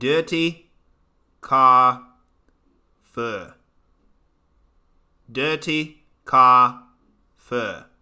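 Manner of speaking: very slow, deliberate South African accent. Answering a chat request to try the phrase: South African accent. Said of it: "Try saying dirty car fur in a South African accent".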